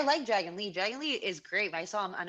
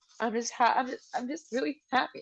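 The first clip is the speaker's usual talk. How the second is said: speaking while crying, tearful voice; 3 semitones higher than usual. Answering another speaker while crying: crying while talking. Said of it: "I'm gonna keep crying. I gotta stop".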